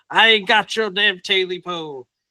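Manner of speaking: high, slow, drawn-out cry. Telling a scary story, the man grabs his gun and screams. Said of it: "he screams".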